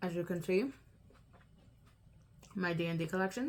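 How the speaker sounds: speaking while eating, mouth full of food. Showing a nail polish collection to viewers, talking with mouth full. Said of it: "I'm talking with my mouth full".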